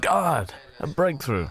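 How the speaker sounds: high, excited tone of sudden discovery.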